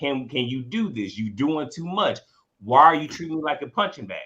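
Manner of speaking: ordinary delivery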